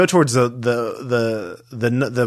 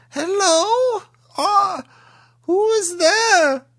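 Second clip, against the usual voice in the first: put-on elderly woman voice, much higher and slower. The game master voices an unseen old woman heard by two players; old woman's voice. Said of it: "you both hear an old woman's voice".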